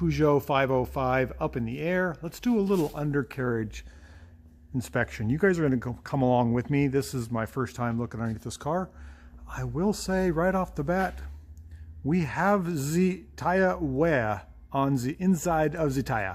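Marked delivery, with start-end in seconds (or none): 12.0-16.3 slow, best-effort put-on French accent. Speaker inspecting a Peugeot's undercarriage with viewers, best French accent. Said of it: "I'm using my best French accent there".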